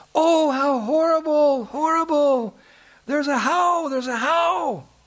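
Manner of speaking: mock very high, drawn-out, fearful long outcry. Retelling a story, the speaker voices a woman crying out at thorn trees; acting out a cry. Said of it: "she cried out".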